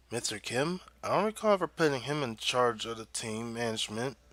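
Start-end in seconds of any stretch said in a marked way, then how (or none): none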